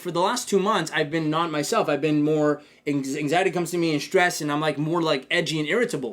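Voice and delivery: ordinary talk, nothing marked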